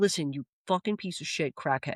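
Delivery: mock-angry ranting. Retelling a phone call to an uncle, acting out an angry rant. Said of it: "I was pissed".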